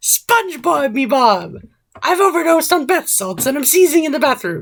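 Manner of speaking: very high, animated, swooping, imperfect cartoon voice. Host attempting a cartoon character's line for the co-host: SpongeBob impression. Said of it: "I don't think the voice was quite right".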